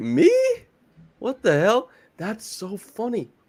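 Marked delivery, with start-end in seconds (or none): 0.0-1.9 stunned disbelief, very high-pitched and swooping. Retelling how a traded player reacted on video: imitating a surprised player. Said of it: "He's like".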